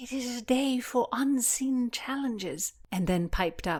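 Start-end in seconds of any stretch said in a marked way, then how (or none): 0.0-2.7 slurred whisper, much higher. After a page's rope throw lands short in the water, she speaks: slurring whisper. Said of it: "whispered in her slurring voice".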